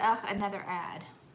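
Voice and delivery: normal talking voice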